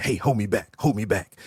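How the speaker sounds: put-on whisper. Acting out a wrestler who talks tough but asks to be held back: imitating someone whispering. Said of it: "you whispering to the guy behind you".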